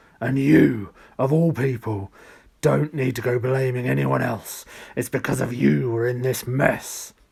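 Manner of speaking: gloomy, loud, booming bass voice that rumbles. Narrator reads the line of a voice speaking in the story, very deep bass voice. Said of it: "so bass it made Odd's stomach vibrate".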